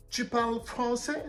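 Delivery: French with put-on English accent. Reenacting a reply to an American who speaks French: French with an English accent. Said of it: "mais avec un accent anglais".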